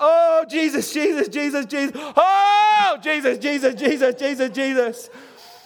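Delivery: slow, fervent voice, "oh" drawn out. Retelling an aunt at an overtime game, imitating someone praying out loud. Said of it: "I hear her praying out loud".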